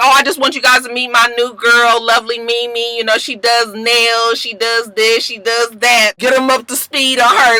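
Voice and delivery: ordinary talk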